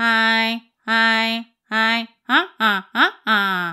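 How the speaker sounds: loud, nasal cartoon duck voice. Voice exercise sending the vibration into the nose: loud nasal Donald Duck voice. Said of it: "pensez aussi à un personnage, à Donald Duck, un canard ... ça sort vraiment ici, au niveau nasal, mais très fort".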